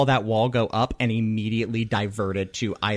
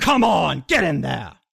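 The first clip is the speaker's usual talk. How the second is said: high, loud shouting. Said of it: "Mantellum shouts up".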